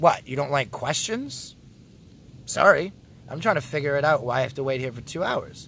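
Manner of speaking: ordinary talk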